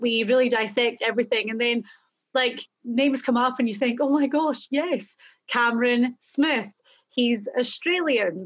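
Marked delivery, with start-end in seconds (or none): none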